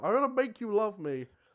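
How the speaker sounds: high, loud shout in a dwarf voice. The narrator repeats what everyone hears the dwarf shout: retelling a dwarf's shout. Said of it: "you all hear this dwarf just shout".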